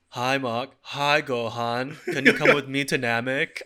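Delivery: weird, put-on Eastern European accent. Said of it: "the accent's so hard".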